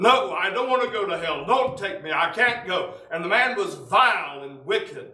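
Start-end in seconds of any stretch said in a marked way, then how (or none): 0.0-2.9 acted, full-throated scream at the top of the voice. Recounting a wicked man standing against the wall, imitating a man screaming. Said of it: "screaming at the top of his voice".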